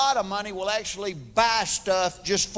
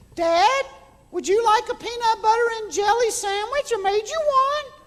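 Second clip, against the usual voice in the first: put-on tiny, very high little-girl voice; 13 semitones higher than usual. A father retells his oldest daughter walking in: imitating her high voice. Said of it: "she's got a real high voice".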